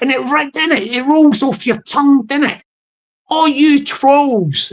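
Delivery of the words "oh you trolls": funny, put-on Scottish accent. Acting out a Scottish guy telling off trolls: Scottish guy voice. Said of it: "This is a Scottish guy saying it".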